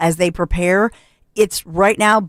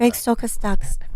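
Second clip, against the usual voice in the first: put-on woman's voice, higher pitch; 3 semitones higher, 4 dB quieter than usual. Asked by a co-host to defend her in her voice: Melania voice. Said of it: "Defend her in her voice".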